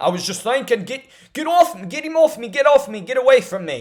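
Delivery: rough attempt at Scottish accent, pitched high. Retelling what a fighter said after the fight: not-great Scottish accent as Chris Duncan. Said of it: "I don't have a great Scottish accent".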